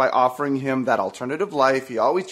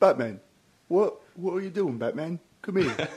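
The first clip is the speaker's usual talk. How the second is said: put-on English accent, higher and quieter; 3 semitones higher, 5 dB quieter than usual. Doing a Michael Caine impression on request: Michael Caine impression. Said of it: "Give me your best, Michael Caine".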